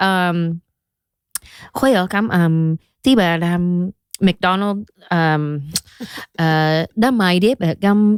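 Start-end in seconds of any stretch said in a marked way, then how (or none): 1.7-8.2 slow fake Vietnamese, invented gibberish words. Tricking friends by talking to a brother: fake vietnamese gibberish. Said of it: "we're making up words".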